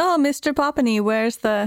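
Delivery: slow, high put-on German accent. Acting out a German student who comes by to ask the teacher something, German accent. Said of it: "That's my German accent".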